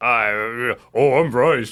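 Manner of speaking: put-on very low-pitched voice. Introducing themselves at the start of the show, in a low Bryce voice. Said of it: "I'm going to be my Bryce voice today. It's way down here".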